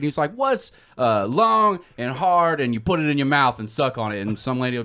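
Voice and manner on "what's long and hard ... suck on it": mocking game-show host voice. Retelling a comedian's bit mocking a game show host: Steve Harvey impression. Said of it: "making fun of Steve Harvey".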